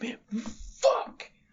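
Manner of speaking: frustrated yelling. Losing a trivia round to the other player, frustrated yelling. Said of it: "Why are you yelling 'fuck' every thirty seconds?".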